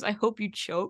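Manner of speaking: normal talking voice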